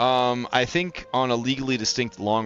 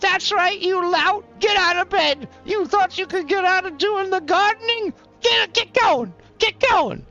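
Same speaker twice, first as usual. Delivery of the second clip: shrill, very high, loud scolding tone; 5 dB louder than usual. Voicing a wife hitting her husband with a broom: scolding wife. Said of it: "his wife starts hitting him with the broom".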